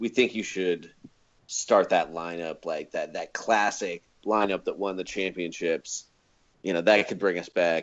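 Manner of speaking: ordinary talk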